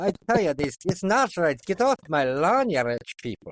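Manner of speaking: worst-ever put-on Scottish accent. Discussing a show, the speaker voices a character: bad scottish accent. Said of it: "Worst Scottish accent ever".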